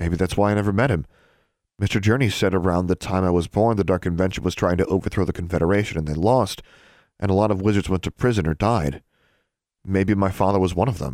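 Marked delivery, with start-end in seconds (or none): none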